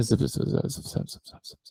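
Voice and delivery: very soft, hushed whisper. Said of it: "And I went".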